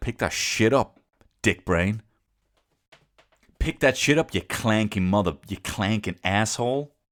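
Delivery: taunting, insulting schoolyard-bully tirade. Imagining bossing around a clanking robot servant: mock bully voice. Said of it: "I'm gonna be like a fucking bully".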